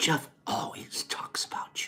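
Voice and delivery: hushed, soft, close whisper. Recounting what a woman whispered in their ear, retelling a whisper. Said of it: "She whispers in my ear".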